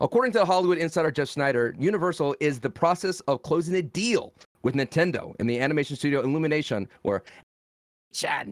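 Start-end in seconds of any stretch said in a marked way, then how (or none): 7.0-8.5 breathy, whispered cartoon-creature sidekick voice. Reading movie news aloud, the speaker briefly drops into a Minion impression. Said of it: "That was my impression of a minion".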